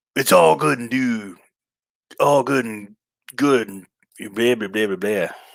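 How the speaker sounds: halting wrestler-style drawl, dragged out, tripping over words. Narrating a wrestling game as the wrestler comes out: Hulk Hogan impression. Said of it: "trying to do the Hogan impersonation".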